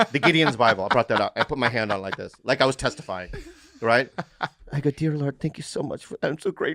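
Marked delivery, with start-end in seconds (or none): 4.9-6.8 mock-tearful, imitated crying, quieter. Speaker retells kneeling by a hotel bed with a Bible, retelling own crying. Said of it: "I started crying".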